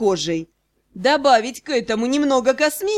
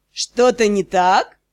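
sarcastic, snide, needling, mocking tone; 3 semitones lower than usual. Someone questions the narrator in the strange bedroom, snide and sarcastic. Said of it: "ехидно поинтересовались у меня".

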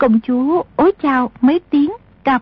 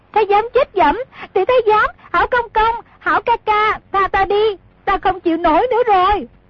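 high giggling, laughing loud outcry; 9 semitones higher than usual. Reading a story, the narrator voices the princess's line, giggling while crying out loud. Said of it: "cười khanh khách la lớn".

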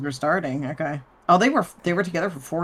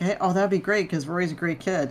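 normal talking voice

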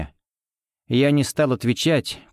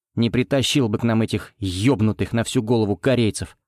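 ordinary delivery

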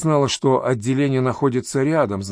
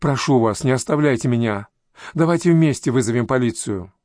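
plain reading voice

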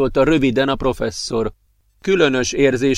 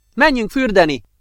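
bright, happy, cheerful shout, pitched up; 8 semitones higher than usual. One friend calls out to the other, shouting cheerfully. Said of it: "kiáltotta Lowt vidáman".

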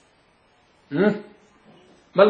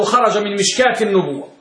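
plain

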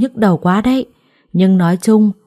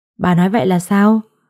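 ordinary delivery, nothing marked

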